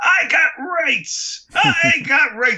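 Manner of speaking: very high, shrill, drawn-out put-on villain scream. Retelling how the captured villain in a film protests: imitating a screaming villain. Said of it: "he is screaming".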